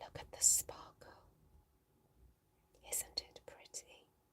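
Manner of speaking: soft, very quiet ASMR-style whisper. Doing a playful ASMR bit over a sparkly item: ASMR-style whisper. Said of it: "Me whisper".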